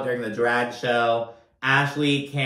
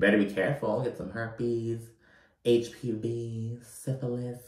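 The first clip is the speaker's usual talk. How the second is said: muttering under the breath. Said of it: "muttering under her breath".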